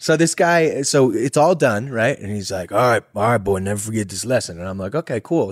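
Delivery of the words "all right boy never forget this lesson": put-on old-West cowboy outlaw voice. Speaker retells a man's words after a whooping, Red Dead Redemption character voice. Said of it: "sounds like a character out of Red Dead Redemption".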